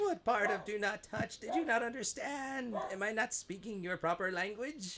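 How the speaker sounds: very high, fussy, fretful robot voice in panic. A robot assistant in a command center fussily scolds someone who touched something they shouldn't have, fussy and panicky. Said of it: "teenagers in the command center. [name], I don't know how this happened. / And he turns around and does a quick 180, / talking to a robot".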